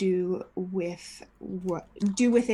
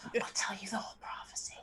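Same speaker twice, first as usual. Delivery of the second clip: soft, hushed whisper under the breath; 2 semitones higher, 10 dB quieter than usual. The game master voices a man held up by the collar: whispering. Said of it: "he whispers to you".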